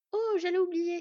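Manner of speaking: loud high-pitched exclaiming. Narrator reads a story; the teenage boy speaks up to the girl, exclaiming.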